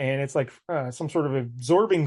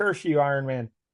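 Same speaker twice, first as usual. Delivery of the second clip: ordinary talk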